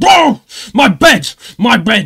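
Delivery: acted, very loud, very high, very slow angry outburst. Retelling a phone call before the recording: imitating Matt being angry. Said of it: "you've actually been very pissed off today".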